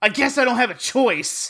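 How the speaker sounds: high passive-aggressive tone. Retelling what a man muttered to the air: imitating a passive-aggressive remark. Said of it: "that's a little passive-aggressive".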